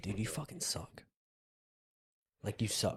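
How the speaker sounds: mock, breathy, half-whispered teasing, joking but serious. Retelling how a friend insults people: imitating Michael, joking but serious. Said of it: "says it in a, like, joking manner, but he's serious".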